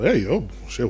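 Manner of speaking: ordinary talk, nothing marked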